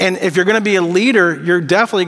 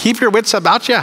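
attempted put-on Irish accent; 4 semitones higher than usual. Suggesting how a line could sound, in an attempted Irish accent. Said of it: "I wanted to do like an Irish accent with that".

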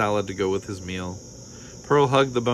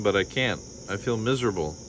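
ordinary delivery

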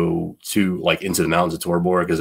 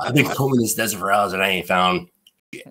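put-on thick Boston accent; 2 semitones higher than usual. Retelling what Russo said when he came back, imitating Russo's thick Boston accent. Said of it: "the guy with the super thick Boston accent".

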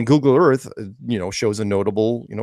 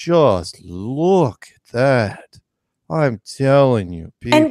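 put-on copied drawn-out European accent; 2 semitones higher than usual. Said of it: "It's European and it's very drawn out".

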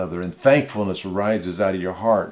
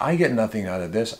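ordinary talk, nothing marked

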